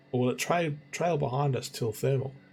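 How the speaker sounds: ordinary delivery, nothing marked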